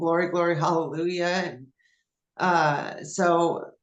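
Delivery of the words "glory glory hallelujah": plain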